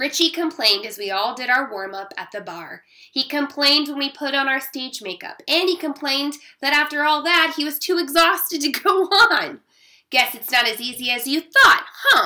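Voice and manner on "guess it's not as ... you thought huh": loud, sneering, taunting jab. Narrator taunts Richie just before they go on stage, sneering. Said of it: "I sneered".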